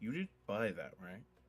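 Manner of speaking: soft, hushed half-whisper under the breath. A narrator voices a character asking a question of another character, half-whispering. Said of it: "he kind of whispers".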